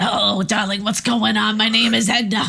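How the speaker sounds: put-on voice of an old smoker. Picking up the other speaker's joke, speaker plays Edna in an eighty-year-old smoker voice. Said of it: "I sound like an eighty-year-old smoker".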